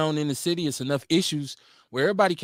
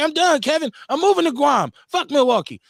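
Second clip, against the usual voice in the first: mock fed-up angry outburst, very high and loud; 10 semitones higher, 6 dB louder than usual. Imitating the guest when upset at a meeting: imitating someone getting mad. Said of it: "You get mad, you get in your feelings".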